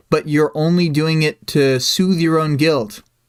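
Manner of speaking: ordinary delivery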